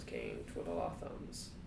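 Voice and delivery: deep voice.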